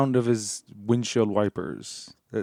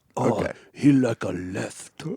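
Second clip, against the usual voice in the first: slow, halting English in put-on Japanese accent. Acting out a foreign spy reading turning data: imitating a japanese accent. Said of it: "really good Japanese accent".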